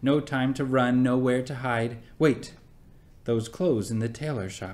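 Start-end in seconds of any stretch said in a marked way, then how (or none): none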